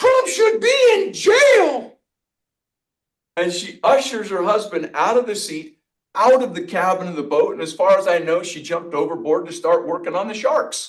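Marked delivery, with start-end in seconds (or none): 0.0-2.0 put-on high, drawn-out calling out. Retelling what the woman yelled out again: imitating a woman yelling. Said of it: "this woman yells out again".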